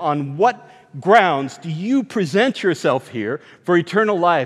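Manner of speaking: usual speaking voice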